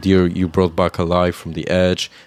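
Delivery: ordinary delivery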